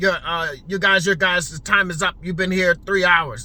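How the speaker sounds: low, stern, no-nonsense voice, acted. Retelling what a man said when he came over, mock-stern voice. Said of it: "he said he said in a stern voice".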